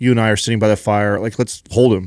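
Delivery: ordinary delivery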